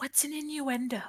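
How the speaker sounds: very quiet voice. Voicing a character speaking from behind Eldar: very quiet voice. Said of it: "You hear very quietly from behind Eldar".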